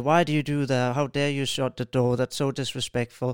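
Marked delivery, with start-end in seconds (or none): none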